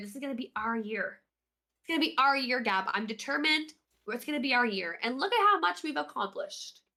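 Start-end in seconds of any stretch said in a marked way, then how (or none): none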